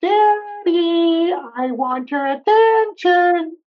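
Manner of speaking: squeaky, very high, very slow, drawn-out doggy voice. Speaker describing how they talk to their dogs, voicing one: Sammy's dog voice. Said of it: "Sammy's voice is like".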